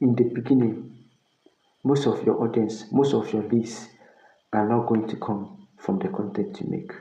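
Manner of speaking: hushed secretive voice. Telling the audience a secret, in a lowered voice. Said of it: "I just want to lower my voice and tell you this secret".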